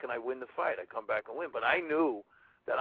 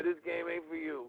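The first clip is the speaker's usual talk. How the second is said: imitated screaming voice; 4 semitones higher, 3 dB quieter than usual. Retelling how Ali screamed while giving noogies: imitating Ali screaming. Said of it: "to have Ali do that to me".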